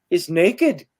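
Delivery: put-on slight, lightly done Scottish accent. Retelling what Chris Conway first said to the speaker, in Chris Conway's Scottish accent. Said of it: "he says with his little Scottish accent".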